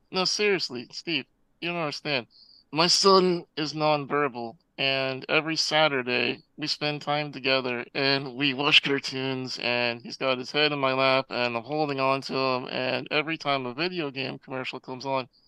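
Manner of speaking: ordinary talk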